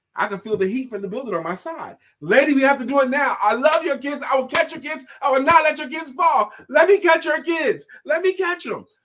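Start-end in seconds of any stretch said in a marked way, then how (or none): 2.2-8.8 urgent, loud, high-pitched preaching yell. Retelling pleading with a mother at a burning building: retelling own yelling. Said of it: "started preaching and yelling at her".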